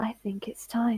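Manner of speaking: whispering. A game master voices Nat grabbing a player from behind, whispering in their ear. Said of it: "and whispers in your ear".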